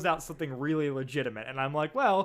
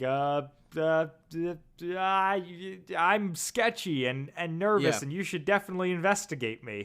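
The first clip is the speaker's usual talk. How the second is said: jittery, stumbling nervous stammer, drawn-out "I". Retelling a scene where Sam answers Lucy: imitating a nervous character. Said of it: "he's real nervous in this".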